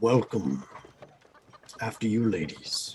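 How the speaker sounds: deep, soft, courteous armored knight voice. Narrator voicing an armored figure welcoming the ladies at a tavern, in a deeper voice. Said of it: "steps up with a deeper voice".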